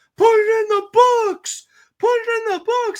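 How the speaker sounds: very high, loud yell. Retelling how a fan in the crowd yelled at a pop-up: imitating a fan yelling. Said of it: "The guy gets up and he just yells".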